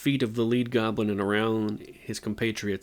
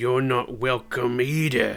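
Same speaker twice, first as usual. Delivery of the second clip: snarling, snarled goblin voice; 2 semitones higher than usual. Reading a story aloud, voicing a goblin, snarling goblin voice. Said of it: "said the goblin with a snarl".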